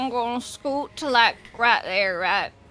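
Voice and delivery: put-on sudden, unplanned Southern American accent. Saying where a game piece will move, southern accent. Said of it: "why I'm Southern all of a sudden".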